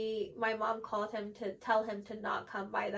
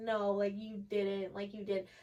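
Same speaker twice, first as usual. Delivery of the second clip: put-on crying, sobbing voice. Retelling what she said crying in the car: retelling her own crying. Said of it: "the whole car ride, I'm, like, crying".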